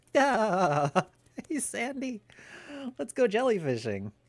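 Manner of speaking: very high, swooping, squeaky, bouncy cartoon voice. Asked for a SpongeBob impression, the speaker obliges: SpongeBob impression. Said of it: "Can you do a SpongeBob impression?".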